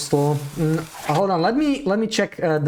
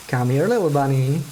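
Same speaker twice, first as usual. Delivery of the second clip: ordinary delivery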